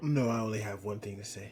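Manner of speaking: hushed whisper. Panelist told to go ahead with his one thing to say, whispering. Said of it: "Are you whispering?".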